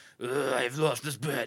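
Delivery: heavy, deep, growly masked-hero voice from the chest.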